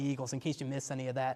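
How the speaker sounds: usual speaking voice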